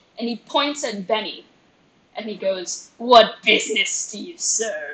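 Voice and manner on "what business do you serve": menacing, threatening goblin monster voice. Voicing a hobgoblin on a throne questioning a player: menacing hobgoblin voice. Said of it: "I'm getting pointed at menacingly".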